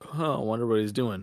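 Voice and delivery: ordinary talk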